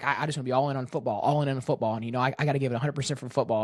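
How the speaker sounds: words tumbling out fast, rushed and rattled off. Retelling an interview about having a girlfriend: imitating Mendoza talking fast. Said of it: "he talks so fast".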